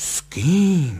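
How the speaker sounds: loud, aghast, horrified cry with kým drawn out. A woman reacts to news from a telegram, horrified. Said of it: "Zhrozila se paní Kalousová".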